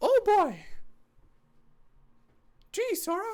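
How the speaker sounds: very high, squeaky, sing-song, swooping cartoon mouse voice. Speaker retrying a voice impression, Mickey voice. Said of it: "I have to do the Mickey one again".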